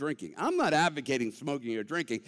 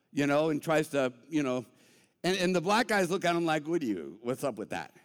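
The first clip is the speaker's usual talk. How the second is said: plain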